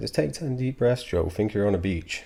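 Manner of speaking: condescending, patronizing therapist-like talking-down voice. Retelling what a school therapist used to say: imitating a slow, patronizing voice. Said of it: "slow, patronizing voice".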